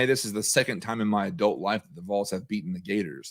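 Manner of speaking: ordinary talk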